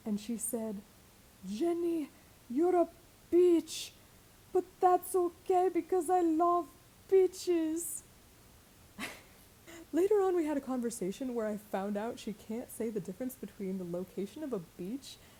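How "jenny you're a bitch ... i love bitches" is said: put-on heavy drunk French accent, loud and slow. Retelling what a drunk woman said to her, imitating a thick drunk French accent. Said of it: "with the French accent that got thicker the more drunk she got".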